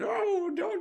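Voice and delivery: desperate, high, loud, tearful crying plea. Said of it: "You're like".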